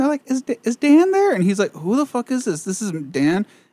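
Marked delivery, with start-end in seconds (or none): 0.3-1.3 fake girly voice, much higher pitch, slower. Retelling a prank call to a friend's landline, in a fake girl voice. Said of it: "someone was pretending to have a girl voice".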